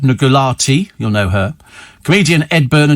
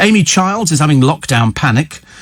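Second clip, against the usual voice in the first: usual speaking voice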